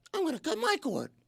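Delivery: nerdy voice, high and soft. Mocking people who say to cut the cord, acting out their talk in a mocking nerd voice. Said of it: "They sound like this".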